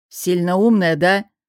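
sharp, curt. A man retorts to the woman citing workplace insult rules, snapped. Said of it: "огрызнулся он".

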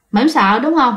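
ordinary talk, nothing marked

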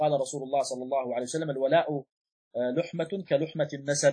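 ordinary talk, nothing marked

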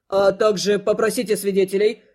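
ordinary delivery

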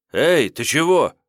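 sudden, abrupt, loud, high call-out. A young man hiding behind boxes calls out as the engine starts; calling out suddenly. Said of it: "неожиданно окликнул его".

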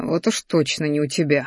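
ordinary delivery

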